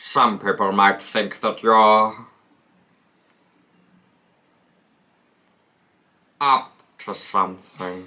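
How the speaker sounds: voice dropped right down low. Showing a backup choice for Snatch Game: Alan Rickman impression. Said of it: "That's my Alan Rickman".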